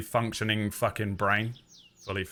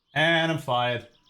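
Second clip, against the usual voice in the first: usual speaking voice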